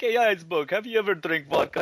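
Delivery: put-on loud, high, boozy drunken voice. Acting out Boris talking to an iceberg: drunk Boris voice. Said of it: "drunk and he's like".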